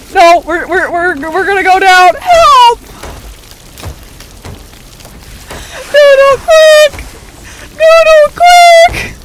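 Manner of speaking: frantic, shrill, very high, panicked screaming, rising. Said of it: "You're screaming so loud".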